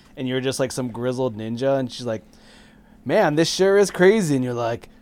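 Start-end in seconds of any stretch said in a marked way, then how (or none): 3.0-4.3 high, loud, perky, spunky tween voice. Retelling the game's banter, the sidekick talking in your ear: imitating a spunky tween. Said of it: "spunky tween".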